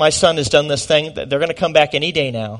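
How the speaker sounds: ordinary talk, nothing marked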